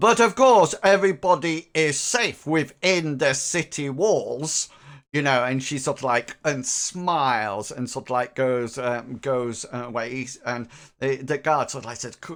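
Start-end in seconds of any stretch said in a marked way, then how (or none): 0.0-4.7 booming, very loud, slow delivery. The captain of the guard speaks to Hengers and companions; very loud voice. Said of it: "the captain of the guard says in a very loud voice".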